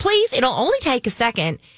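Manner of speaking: put-on Australian accent. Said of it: "she has this Australian accent".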